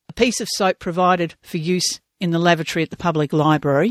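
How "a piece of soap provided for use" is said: usual speaking voice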